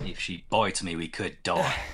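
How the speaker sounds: put-on broad Australian accent, exaggerated. Speaker trying out accents does one for a line: Australian accent. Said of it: "doing Australian".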